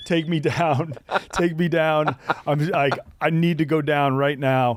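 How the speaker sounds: tearful, crying, sobbing voice. Retelling a friend's breakdown while being pulled up a cliff: imitating someone crying. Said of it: "started crying".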